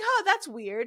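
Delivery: casual, unbothered, zero urgency, high with mild curiosity. Retelling how Loomis looks at the fleeing kids: imitating Loomis, no urgency. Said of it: "there's no urgency at all".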